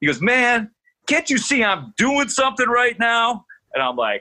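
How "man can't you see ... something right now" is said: mock, pitched way up, confrontational angry yell. Retelling a player snapping at a reporter: imitating someone yelling. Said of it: "gets in my face".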